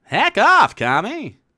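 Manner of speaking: high-pitched, loud, whiny voice. Coaching another speaker on doing Seinfeld, with a whiny Seinfeld impression. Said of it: "you have to do a little whinier".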